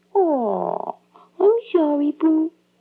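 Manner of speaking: put-on silly, cutesy babyish voice. At breakfast, apologizing to someone complaining that the eggs stink, in baby voice. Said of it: "Stop talking in that stupid baby voice".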